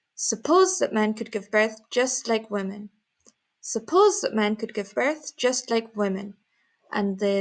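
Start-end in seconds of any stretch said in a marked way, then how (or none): 0.2-6.4 suppose stressed, intonation falling at the end. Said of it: "the intonation goes down, just like this arrow".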